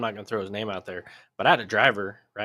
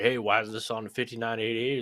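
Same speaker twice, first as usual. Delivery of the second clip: ordinary delivery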